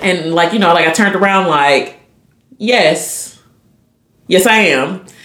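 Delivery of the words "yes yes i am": very slow, unhappy, joyless voice. Retelling own reply when someone mentions the pregnancy: imitating own unhappy-sounding reply. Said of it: "you don't sound happy about it".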